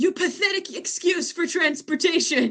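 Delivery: high, furious, enraged scream. Recapping a replayed moment, the speaker acts out a man's line, imitating a furious scream. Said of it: "He screams uh".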